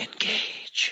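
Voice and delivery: hushed, soft, breathy art-house film whisper. Acting out how she closed her eyes and whispered it: whispered. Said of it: "she closed her eyes and she whispered it. She went, engage, like that".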